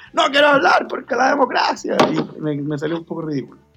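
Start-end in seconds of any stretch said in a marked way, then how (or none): 0.2-2.0 re-enacted shout, much higher and much louder. Speaker recounting yelling into the microphone at a show, retelling a shout. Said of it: "cuando yo gritaba que no quería hablar".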